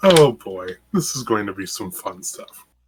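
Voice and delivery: fast, flat, unenthused rattled-off delivery. Welcoming the new players to the session, sounding unenthused. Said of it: "Don't sound so enthused".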